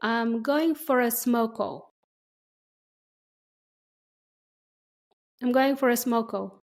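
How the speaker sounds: slow, deliberate, careful and clear delivery. Saying a phrase for learners to repeat: speaking slowly for learners. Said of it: "I'll say each phrase slowly".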